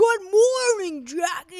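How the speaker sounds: very loud, high, booming bellowed voice. Speaker recalls how a man greeted her in the early mornings; imitating a bellowing voice. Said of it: "he's got this like bellowing voice".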